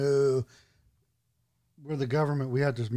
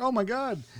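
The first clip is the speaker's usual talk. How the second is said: high-pitched panicked gasp, blurted out way up high. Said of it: "everybody was like".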